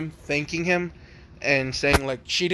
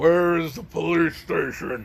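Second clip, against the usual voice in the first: huge monster voice forced from the throat; 2 semitones higher than usual. A storyteller voices a giant hooded figure demanding three girls, in a giant's voice. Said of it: "that voice was not good for my throat".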